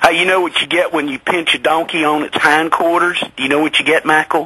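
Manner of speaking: put-on southern American accent. Telling a joke to the listener, in a southern accent. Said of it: "I have to do it in a southern accent".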